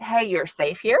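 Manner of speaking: normal talking voice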